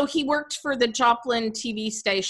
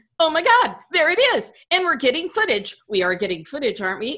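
put-on thrilled, eager, loud, swooping excitement; 4 semitones higher, 5 dB louder than usual. Retelling what a man kept saying on camera at Halloween: imitating someone excited. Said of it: "He's so excited that he keeps saying".

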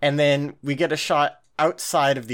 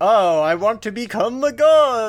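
worst possible vampire voice, high and loud; 7 semitones higher, 6 dB louder than usual. Speaker mocks a character's thin motivation, in the worst vampire voice. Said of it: "That was the worst fucking vampire voice I could do".

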